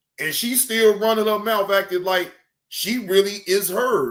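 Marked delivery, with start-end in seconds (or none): none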